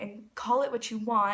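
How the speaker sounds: usual speaking voice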